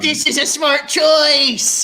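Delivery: high, in-character, yelled battle cry. Charging a hellhound with a training sword, yelling in character. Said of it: "I yell".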